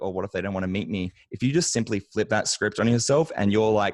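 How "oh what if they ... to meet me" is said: ordinary talk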